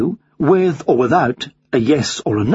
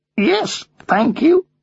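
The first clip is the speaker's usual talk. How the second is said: very high, squawking parrot voice; 10 semitones higher than usual. Narrator reads a bird answering a courteous inquiry, squawking. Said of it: "he squawked".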